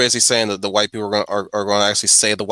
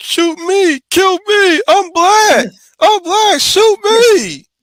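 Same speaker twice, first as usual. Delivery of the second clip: put-on crying voice, higher and louder; 9 dB louder than usual. Retelling a film scene where a man begs police to shoot him: imitating someone crying.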